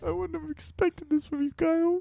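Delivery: put-on very soft, hushed, high prepubescent boyish voice. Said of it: "he went a little bit more prepubescent".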